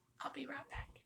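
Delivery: soft whispered aside.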